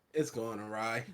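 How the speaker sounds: dry, flat delivery. Speaking on a podcast about a call, totally deadpan. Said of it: "just totally deadpanned".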